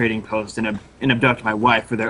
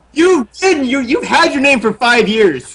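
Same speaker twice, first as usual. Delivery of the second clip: yelling, much louder; 14 semitones higher, 8 dB louder than usual. Arguing with another player over a character name, yelling. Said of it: "stop yelling at me right now".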